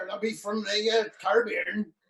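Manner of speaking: put-on pirate voice. Playing a pirate character who says where he is from: put-on pirate voice. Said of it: "Pirate McPirate Face".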